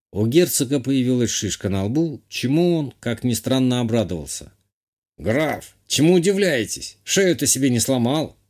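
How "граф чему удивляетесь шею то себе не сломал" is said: with a snorting hmph. After a carriage crash, the old man answers the count with a hmph. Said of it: "хмыкнул старик".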